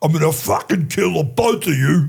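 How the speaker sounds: put-on Australian accent. Retelling a movie scene in a shower: Mel Gibson impression, Australian accent. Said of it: "and then Mel Gibson goes".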